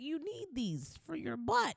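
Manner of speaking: put-on soft, high little boy voice. Reminding a friend of a little boy in a video, in a little boy voice. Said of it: "little boy voice".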